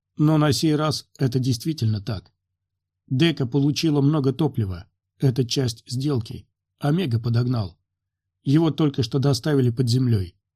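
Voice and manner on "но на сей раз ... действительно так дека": plain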